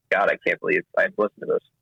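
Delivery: ordinary talk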